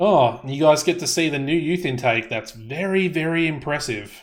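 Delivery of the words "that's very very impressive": dry, mocking, heavily sarcastic pretend admiration. Showing the new youth intake to others: sarcastic. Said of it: "I'm being very, very sarcastic".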